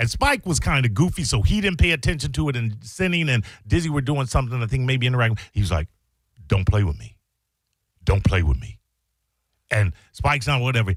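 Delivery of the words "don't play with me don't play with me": put-on dead-serious tone, lower in pitch. Retelling a warning about a pulled knife: imitating Ian Beckles, dead serious. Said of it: "in a tone I have never heard".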